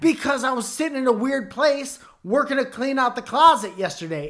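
very high, full of attitude. Retelling how the wife explained her sore legs: imitating wife's attitude. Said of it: "is how you said it with your voice".

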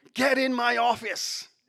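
high, lightly bellowed sergeant voice. Recalling a sergeant summoning him down the corridor, imitating a sergeant's bellow. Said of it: "His voice bellowing down the corridor".

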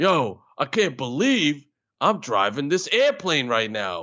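put-on Brooklyn man accent. Showing a character from improv class, doing a brooklyn guy voice. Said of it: "me doing different Brooklyn guys".

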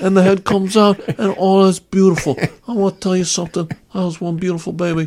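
put-on old mob boss voice. Doing a Godfather bit during a delivery: Marlon Brando Godfather voice. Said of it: "He talks like this".

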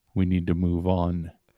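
deep masked villain voice. Describing a figure recruiting a kid, Kylo Ren style voice. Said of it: "has that Kylo Ren style voice".

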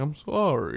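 sad, mournful, melancholy storyteller voice. Imitating Garrison Keillor saying sorry: melancholy Garrison Keillor voice. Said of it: "that kind of melancholy voice".

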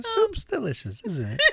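very high, thin, piping voice. Saying a line the way Mrs. Peacock said it: Mrs. Peacock impression. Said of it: "I try to say it the way Mrs. Peacock said it".

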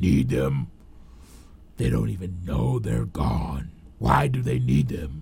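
odd, strange, very low, deep, rasping, scratchy voice. Reading a story aloud, the narrator gives a character a strange, deep, scratchy voice. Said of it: "the strange, deep, and scratchy voice".

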